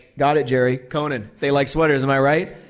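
ordinary delivery

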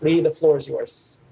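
plain

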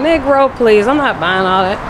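ordinary delivery

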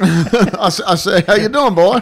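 cartoon-style holler, very high, loud and booming. Answering a greeting as the cartoon rooster: Foghorn Leghorn voice. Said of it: "seen a Foghorn Leghorn cartoon".

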